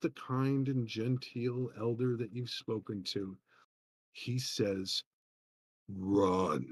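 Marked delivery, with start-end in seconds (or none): 5.9-6.7 harsh, very rough deep bass voice, drawn out. Narrating to the listener, an elder with yellow eyes speaks: very rough voice. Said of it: "In a very rough voice".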